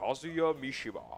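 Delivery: put-on fighting game announcer voice. Commentating a match, trying the announcer call: Tekken announcer voice. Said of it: "I can't do the announcer voice of".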